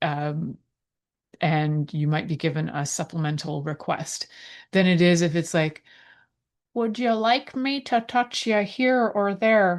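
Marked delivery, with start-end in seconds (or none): 6.7-9.8 a little put-on old man voice, pitched up. Acting out an example request, in a put-on old man voice. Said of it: "a little bit of old man".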